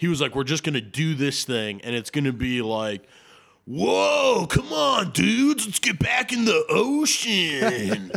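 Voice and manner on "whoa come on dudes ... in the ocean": high-pitched, drawn-out drawl. Retelling how Jason Momoa played Aquaman: Jason Momoa impression. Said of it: "That was a spot-on impression".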